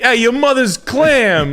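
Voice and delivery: very high, loud squeal with "clam" drawn out. Retelling what a TikTok guy said: imitating Mo Mozzarella. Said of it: "that's so fucking funny".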